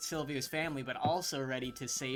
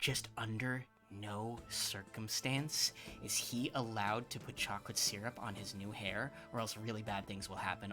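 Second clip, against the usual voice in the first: very soft, hushed fairy whisper aside; 5 semitones lower, 9 dB quieter than usual. As the barber fairy, speaking to Eleanor, whispering. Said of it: "the barber fairy whispers to you".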